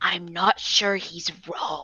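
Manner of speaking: soft, hushed, leaned-in whisper. Leaning down to Alaska in character and replying: whispering. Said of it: "lean down and whisper to Alaska".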